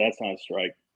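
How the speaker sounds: muttered under the breath. Retelling a player's remark after a called strike: imitating a mutter under the breath. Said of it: "Under my breath".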